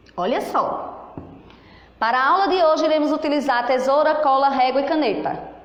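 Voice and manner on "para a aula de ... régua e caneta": one breathless nonstop run with no pauses. Teaching punctuation, reading a sentence missing its periods straight through without pausing. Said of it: "leu assim, sem parar, sem respirar, sem uma pausa".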